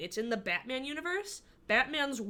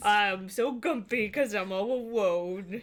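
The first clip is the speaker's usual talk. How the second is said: put-on grumpy baby voice; 3 dB louder than usual. Playing one of the characters made up with a partner, Gumpy Bonds grumpy baby voice. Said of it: "they're both just grumpy babies".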